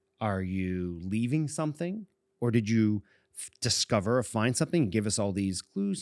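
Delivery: ordinary delivery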